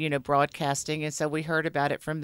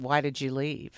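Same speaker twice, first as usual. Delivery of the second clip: put-on flat deadpan delivery. Speaker retells what a mayor asked him on a panel, retelling a deadpan reply. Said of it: "he just deadpanned and looked at me".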